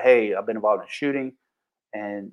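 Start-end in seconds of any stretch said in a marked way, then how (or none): none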